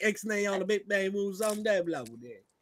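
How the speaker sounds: soft, put-on street-tough Baltimore voice. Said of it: "Starts talking like one of those Baltimore thugs".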